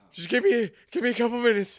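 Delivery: put-on breathlessness. Retelling a movie scene after climbing to the top: imitating someone out of breath. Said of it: "I'm experienced with being out of breath".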